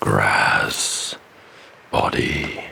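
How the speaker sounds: very deep, creaky, lumbering creature voice. Retelling what she said to another character, in a deep, deep voice. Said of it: "in a deep, deep voice".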